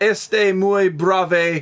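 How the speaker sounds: Spanish phrase spoken with an Italian-flavored accent. Asked to say a phrase, in an Italian-sounding accent. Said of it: "That sounded Italian, right?".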